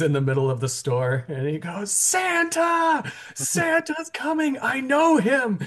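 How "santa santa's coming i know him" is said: very high, slow, drawn-out, thrilled, excited shout. Retelling the movie scene where he learns Santa is coming: mock super-excited Elf shout. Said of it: "And he's super excited".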